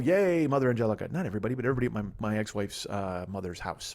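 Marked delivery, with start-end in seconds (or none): none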